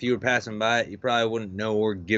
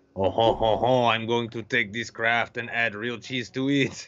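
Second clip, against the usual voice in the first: slow, drawn-out, put-on French accent; 2 semitones higher than usual. Teasing another speaker about combining foods: mock French accent. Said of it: "it's like you're French or something".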